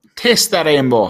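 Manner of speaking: put-on Irish accent. Asked by the other speaker to show off an Irish accent: put-on Irish accent. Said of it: "let's hear you".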